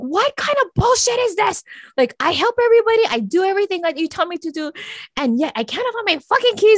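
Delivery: mock furious, high, angry yelling rant. Speaker retells losing keys and yelling at god; retelling an angry yell. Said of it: "And I start yelling at God".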